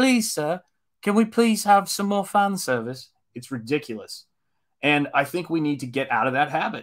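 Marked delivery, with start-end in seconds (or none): 0.0-3.1 high, pitched-up, humble begging plea. Mocking fans who beg for more fan service: imitating Oliver Twist pleading. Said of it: "Oliver Twist going".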